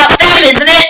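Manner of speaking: high-pitched, loud, accusing shout. Narrating a scene, a character points at the listeners and shouts. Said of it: "points to you all and shouts".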